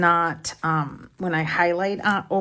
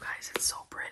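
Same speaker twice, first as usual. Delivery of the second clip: barely audible, very soft, breathy hushed whisper. Speaker talking to 'you guys' while fitting a book cover: whispering. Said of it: "I don't know why I'm whispering".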